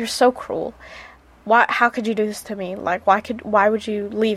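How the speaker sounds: mock-heartbroken, devastated, kicked-puppy voice. Describing how he reacted to being left, acting out his heartbroken plea. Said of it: "And he's just so sad".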